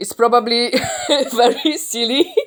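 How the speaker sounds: slow speech broken up by laughter. Commenting on a plot choice he finds silly, laughing while talking. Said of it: "Sorry guys that I'm laughing".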